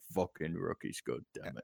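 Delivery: very quiet, grumbling mutter under the breath. Voicing a guard who grumbles about rookies: muttering to himself. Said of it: "he's just muttering to himself".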